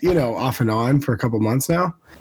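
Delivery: ordinary talk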